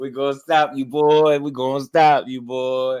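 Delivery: friendly, high and loud. Retelling what Floyd Schofield Senior told Shakur, imitating Floyd Schofield Senior's friendly threat. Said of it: "That's how he sound. Friendly. That's one of the friendliest, friendliest threats I've ever heard".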